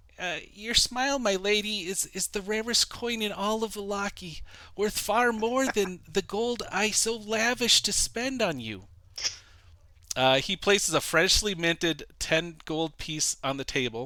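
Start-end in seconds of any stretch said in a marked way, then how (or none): 0.5-8.8 earnest, high-pitched character voice. Game master speaking as Vasily to Irina, in a quiet, earnest, high-pitched voice. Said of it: "speaks in a quiet, earnest, high-pitched voice".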